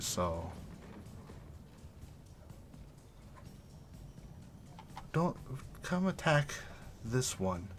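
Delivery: very quiet, whispered, seductive serpent-woman voice. Game master voicing a snake woman whispering to a player, whispering snake woman. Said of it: "with her forked tongue she whispers to you".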